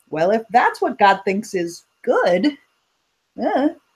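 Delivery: snarky, sarcastic reading with swooping pitch. Showing one way to read a line about god, snarky sarcastic tone. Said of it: "if you read it kind of snarky".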